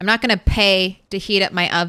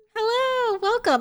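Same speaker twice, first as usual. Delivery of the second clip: very high, sweet, put-on nice voice; 3 dB quieter than usual. Retelling greeting customers as a cashier while suppressing hiccups, put-on nice and smiley. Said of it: "being all nice and smiley".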